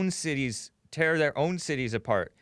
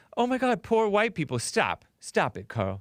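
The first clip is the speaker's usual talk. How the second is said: fake, sugary-sweet, phony tone, pitched up; 4 semitones higher than usual. The speaker mimics a campaign staffer, mocking her phony sweet voice. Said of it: "she has this phony sweet voice".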